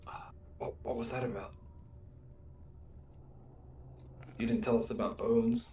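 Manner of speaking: soft, hushed, breathy whisper. In the game, a player's character speaks to Emil, whispering. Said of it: "try to whisper to Emil".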